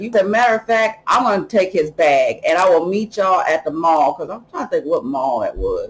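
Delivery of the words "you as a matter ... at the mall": ordinary delivery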